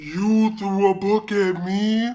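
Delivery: really deep, loud, very slow voice. Retelling what the teacher said after a book hit her: imitating the teacher's deep voice. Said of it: "that's literally how she sounded".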